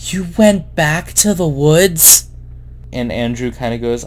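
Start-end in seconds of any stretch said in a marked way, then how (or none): 0.1-2.3 very tired, strained voice, pitched up. Retelling what he said to Andrew, imitating a tired, strained voice. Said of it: "in a very tired, strained voice".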